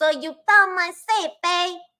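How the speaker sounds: very high, hammed-up put-on Italian mobster accent. Redoing the mobster's line: Italian mobster accent. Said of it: "that's more like Italian".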